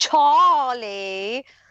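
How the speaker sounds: put-on British pronunciation of Charlie, drawn out. Retelling how someone says a name: imitating Nicholas Nave's British accent. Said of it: "he does it in a British accent and says".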